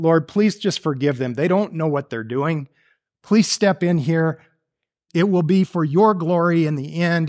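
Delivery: ordinary delivery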